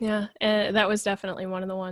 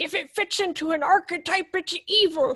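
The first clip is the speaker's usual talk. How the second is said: put-on very high creaky elderly voice; 10 semitones higher, 4 dB louder than usual. Quoting the two people he's talking with from an earlier discussion, imitating them as old. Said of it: "I don't know why I'm making you both sound old".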